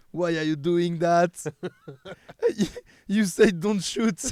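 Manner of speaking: put-on French accent, very loud and high. Reading out a chat message in English, deliberate French accent. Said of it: "je vais le faire avec mon accent français volontairement".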